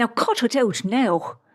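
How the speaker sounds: slow put-on Irish accent. Podcast host quotes what one of their grandmothers would have said, in an Irish accent. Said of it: "I will not be doing this entire podcast with an Irish accent".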